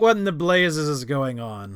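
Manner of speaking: bellowed at full volume, very loud and booming. Walking into the room in character, speaking in a loud voice. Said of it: "spoke in a loud voice".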